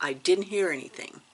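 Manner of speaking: ordinary talk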